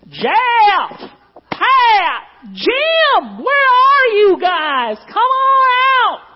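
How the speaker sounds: very high, very slow, drawn-out sing-song yell. Retelling how a neighbor kid stood outside calling: imitating a kid yelling. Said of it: "he would stand out there yelling".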